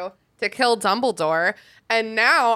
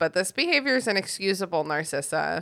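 usual speaking voice

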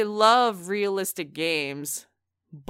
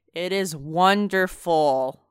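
slow, mock-enthusiastic tone. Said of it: "That sounds very enthusiastic".

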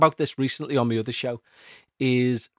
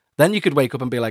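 ordinary delivery

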